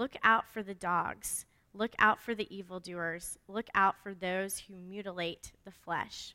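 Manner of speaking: slow, unhurried, deliberate reading tone.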